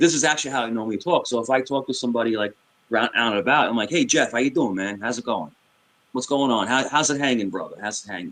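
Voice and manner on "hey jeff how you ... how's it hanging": speaking with a strong New York accent. Showing how the speaker talks out and about: strong New York accent. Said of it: "so I'll flip it".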